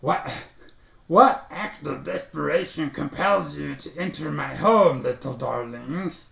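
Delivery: rough, croaky, croaking toad-creature voice. A toad-like creature questions visitors entering its home: low croaking voice. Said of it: "speaks to you in a low croaking voice".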